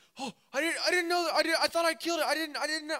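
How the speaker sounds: mock very high, loud, frantic, stumbling freaked-out babble. Retelling a little brother's reaction to the hurt rabbit: imitating brother freaking out. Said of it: "my little brother starts freaking out".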